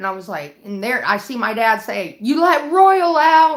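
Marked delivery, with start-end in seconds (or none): 2.2-3.6 high, very loud, drawn-out screaming. Retelling a father screaming at the cops: imitating someone screaming. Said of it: "He was screaming at the cops".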